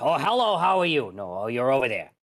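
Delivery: goofy, silly dwarf character voice. Recalling a Baldur's Gate session, the player does the cross-eyed dwarf voice. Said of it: "talked a little like this".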